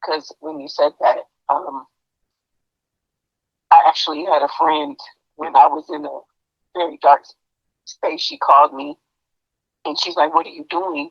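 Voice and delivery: emotional, choked up voice. Telling about a friend who called her during a very dark time, choked up. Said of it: "I'm getting choked up".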